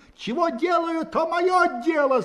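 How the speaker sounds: very high, sudden, loud, angry shout. A soldier, laughed at by the crowd, turns on Levitin: sudden shout. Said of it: "закричал он вдруг".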